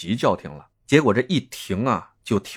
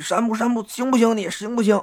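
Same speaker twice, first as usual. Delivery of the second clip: very high, play-acted, called-out voice; 12 semitones higher than usual. Recounting a rescue, speaker mimics people calling to a man pulled from a car: imitating people calling out. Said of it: "叫他".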